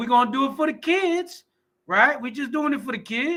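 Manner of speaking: sarcastic, whiny mock tone. Showing how Christians cop out, mocking Christians' excuse. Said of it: "This is how they do it".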